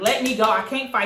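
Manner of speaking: mock tearful, crying pleading tone. Retelling being held down in a fight, retelling tearful pleading. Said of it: "So now I'm down there in tears".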